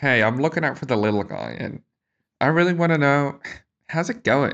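insincere, bad-faith, fake-friendly corporate voice. Mocking a co-host's greeting as a company speaking in bad faith. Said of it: "You sound like a company speaking in bad faith. Like".

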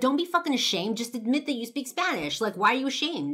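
very loud, high-pitched yelling. Retelling what a stranger yelled at them: imitating a man yelling. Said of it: "yelling at me".

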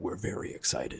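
hushed, whispered movie theater announcer voice. Podcast co-host signing off to listeners in a movie theater voice. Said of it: "That was a good, like, movie theater voice".

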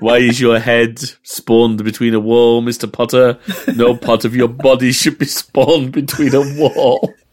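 lightly camp government-agent voice. Speaker addressing Mr. Potter during a Half-Life chat: Alan Rickman impression. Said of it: "That is definitely Alan Rickman".

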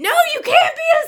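put-on screaming. Picturing an overtired mom at Halloween, imitating her screaming. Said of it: "she's just screaming".

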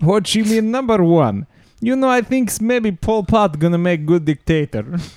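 bad, stupid, fake Russian accent, high-pitched. Asked to do it, performing a comic bit in a stupid russian accent. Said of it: "You can do the stupid Russian accent".

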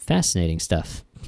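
low, soft, dismissive delivery. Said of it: "that sounded dismissive".

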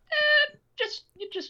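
very high, distant mock film director voice. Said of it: "they're like".

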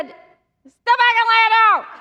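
loud, slow, thick Cajun accent.

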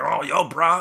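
put-on hostile, picking-a-fight, angry, aggressive bro voice. Retelling a confrontation with a guy at a booth, imitating an angry guy. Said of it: "just like mad".

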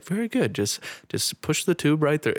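very calm, even delivery. Retelling how a doctor spoke during a first intubation: imitating someone speaking very calmly. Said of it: "she was just very calm".

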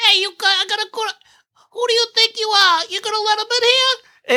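very high, terrible, botched put-on mobster voice. Recounting how the captain above Gordon talked, terrible Godfather impression. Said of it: "shittiest goddamn Godfather fucking impersonation".

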